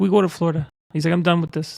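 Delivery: imitated Spanish accent. Retelling what a man told him, the speaker does the man's spanish accent. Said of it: "he had like a Spanish accent".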